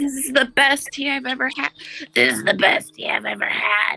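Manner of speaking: put-on old woman voice. Voicing a character praising her tea: old woman from SpongeBob voice. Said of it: "That's the perfect voice for her".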